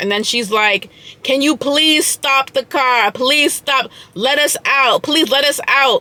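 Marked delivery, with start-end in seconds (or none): 1.2-6.0 play-acted desperate, panicked, urgent voice. Retelling a friend begging the driver to stop: imitating a panicked plea. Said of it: "having a panic attack".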